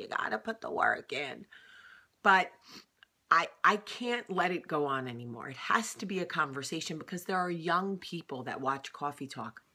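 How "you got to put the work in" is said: put-on crazy old woman voice. Explaining hesitation about a Coffee Talk segment, doing a crazy old lady voice. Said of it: "I sound like that old crazy lady that's like".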